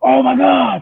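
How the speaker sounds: high, loud, excited scream. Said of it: "I was screaming".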